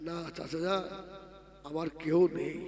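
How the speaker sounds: soft, low, hushed, grieving voice.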